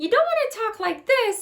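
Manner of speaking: very high, loud, pushed-up cartoon voice. Showing a voice lifted too far: Mickey Mouse voice. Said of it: "like a Mickey Mouse or some weird crazy character".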